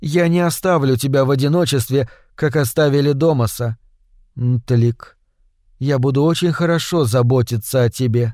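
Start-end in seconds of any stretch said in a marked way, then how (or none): none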